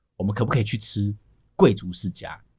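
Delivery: put-on soft voice. Speaker retelling how he quietly asked his wife something: retelling a quiet question. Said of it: "我就小小声的问我老婆".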